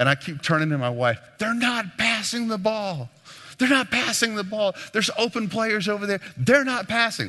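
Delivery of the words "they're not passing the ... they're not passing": very high, exasperated, frustrated shouting. Retelling running the sideline at the kids' game, turning to the wife: retelling own sideline yelling. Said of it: "I'm like yelling at them".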